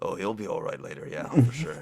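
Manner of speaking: mumbled under one's breath, half to oneself. Player voices their character walking on past someone, muttering under breath. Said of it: "muttering under my breath like".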